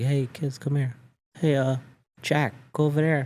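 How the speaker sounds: humble, mild, quiet, soft-spoken. Imitating his son's soccer coach calling to the kids, imitating a quiet coach. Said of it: "He was real quiet".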